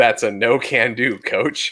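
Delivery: put-on sarcastic tone. Retelling how he answered his coach, the speaker quotes himself in a retold sarcastic tone. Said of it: "in my sarcastic ass self".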